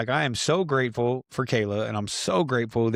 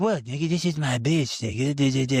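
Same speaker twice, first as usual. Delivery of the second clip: mock wasted, drunk-sounding voice. Retelling how a brother talked when messed up: imitating someone talking wasted. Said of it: "This is how he talks when he's all fucked up".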